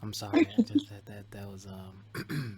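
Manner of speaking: very soft, slow, hushed smooth voice. Reacting after a conversation full of gems, apologizing: soft voice. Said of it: "where your voice gets all soft".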